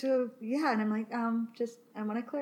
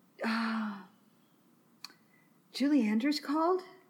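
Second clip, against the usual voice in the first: put-on sleepy voice. Retelling a phone call from a boyfriend who just woke up: imitating Chris sounding half asleep. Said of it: "he sounds so, like, he's still asleep".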